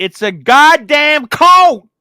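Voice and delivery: dramatic, high, loud, slow booming voice.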